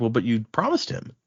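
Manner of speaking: normal talking voice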